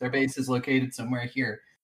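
ordinary delivery

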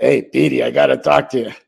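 rough, gravelly voice, ground out. The Flyers coach comes up to Petey in Philadelphia; do Coach Dineen's gravelly voice. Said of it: "he had that gravelly voice".

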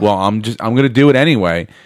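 ordinary talk, nothing marked

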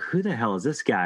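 plain

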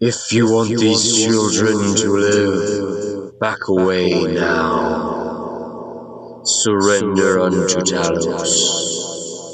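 gentle, echoing voice. Narrating a tabletop scene where a woman's voice carries through the town, booming voice. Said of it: "you hear her voice boom".

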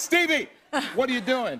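screamed out, shrill and very high. Retelling screaming as the car starts down the driveway: retelling own past scream. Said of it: "And I screamed".

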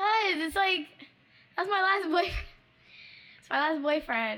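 high, tearful speech broken by crying. Answering a best friend who asks why: crying while talking. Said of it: "you're crying".

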